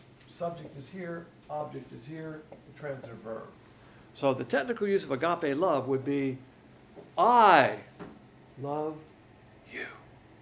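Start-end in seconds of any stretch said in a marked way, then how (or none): 7.2-9.9 all the stress on I. Explaining agape love with emphasis on the subject: stress on I. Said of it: "I'll use the inflection of my voice to describe it. ... all the emphasis is on the subject and none is on the object".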